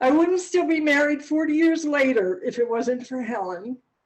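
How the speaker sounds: close to crying, voice cracking. Thanking a best friend, helen, in front of family: tearful, voice breaking. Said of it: "I'm going to cry".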